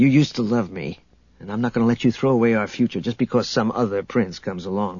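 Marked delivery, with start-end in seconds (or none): none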